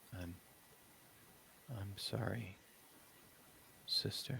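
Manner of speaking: faint whisper spoken right into the ear. A narrator voices a character being bitten, whispering in the listener's ear. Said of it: "he whispers sort of in your ear".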